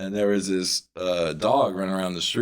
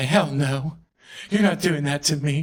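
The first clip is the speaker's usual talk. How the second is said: high, shocked, affronted and scandalized; 7 semitones higher than usual. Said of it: "let me grasp my pearls".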